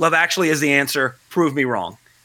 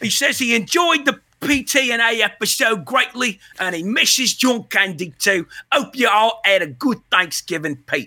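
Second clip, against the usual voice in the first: put-on Cockney accent, pitched up; 6 semitones higher than usual. Reading out the rest of Pete's message on the show, in a Cockney accent. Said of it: "maybe I'll read the rest of it in a Cockney accent".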